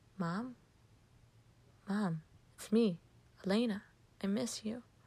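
ordinary delivery

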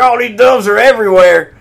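very high, loud, frantic panicked freaking-out. Acting out the scene where the dove cage gets knocked over: Aaron Eckhart freaking out. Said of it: "And Aaron Eckhart's freaking out. He's like".

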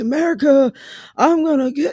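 put-on high, slow, drawn-out, aged old-man voice. Explaining how voices age with time: Joe Biden impression. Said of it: "He kinda sounds like this".

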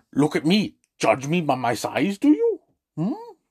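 bad, swooping put-on creature voice. Quoting a favourite movie character's best lines to listeners, in a terrible Yoda impression. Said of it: "These are terrible Yoda impressions".

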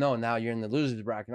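ordinary talk

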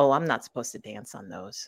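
dry, low deadpan delivery. Retelling what she said after twirling around in a parking lot, retelling a deadpan line. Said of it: "she deadpan says".

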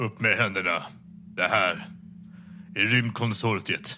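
deep, dark, gruff put-on voice. Storyteller voices a pistol-holding agent jumping behind a glowing monolith: dark, gruff put-on voice. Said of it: "med mörk, barsk röst som inte är hans egen".

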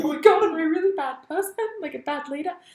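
high, loud, panicked voice full of doubt.

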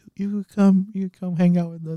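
put-on adorable little voice. Retelling how she invited them to come hang out, imitating her adorable little voice. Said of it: "her adorable little voice".

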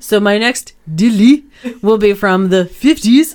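awful, bad fake French accent. Introducing the next crime after trying to say it in french, in an awful french accent. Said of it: "That's an awful French accent".

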